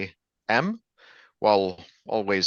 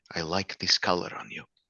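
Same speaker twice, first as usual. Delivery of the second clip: soft, discreet, close whisper; 6 dB quieter than usual. In a role-play, the character leans in during a handshake, whispering. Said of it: "I'll whisper".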